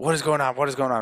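acted, furious, really angry villain outburst. Retelling a movie scene, acting out the villain's outburst, imitating an angry Doc Ock. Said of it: "Really angry".

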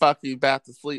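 normal talking voice

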